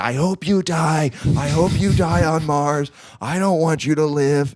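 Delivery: small, high, mild half-yelled outburst. Retelling listening to an audiobook while driving, imitating own screaming.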